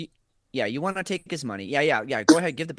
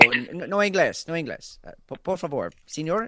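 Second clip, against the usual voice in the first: fake Spanish accent with broken phrasing; 2 semitones higher, 3 dB louder than usual. Speaker demonstrating what the listener could say to a man, mock spanish accent. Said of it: "a good enough Spanish you know accent".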